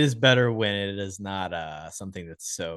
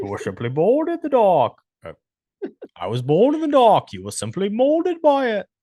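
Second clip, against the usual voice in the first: put-on muffled villain voice, higher and louder; 12 semitones higher, 7 dB louder than usual. Following a remark that the impression sounds like Bane: Bane voice. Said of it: "It's a little Bane-esque".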